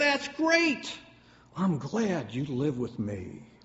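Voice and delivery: proudly. A father answers his small boy's news, proud. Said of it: "His father proudly said".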